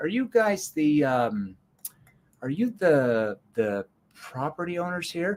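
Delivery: put-on confused tone, feigned uncertainty. Retelling how they would approach people at a property, in a put-on confused tone. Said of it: "my confused tone".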